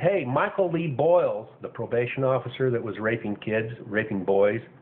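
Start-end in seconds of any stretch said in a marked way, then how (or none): none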